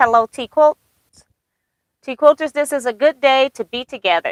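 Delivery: normal talking voice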